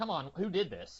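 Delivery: loud yelling, projected across a room. Retelling a movie scene where a character yells at everyone: imitating someone yelling. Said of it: "he's yelling at everyone, like".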